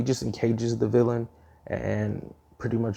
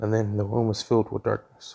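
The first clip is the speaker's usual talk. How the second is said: ordinary talk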